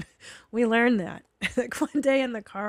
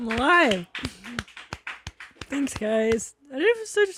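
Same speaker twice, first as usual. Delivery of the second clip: slow, tearful, crying emotional voice; 3 semitones higher, 3 dB louder than usual. Guest welcomed back to the studio thanks everyone, crying. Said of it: "I'm so embarrassed that I'm crying".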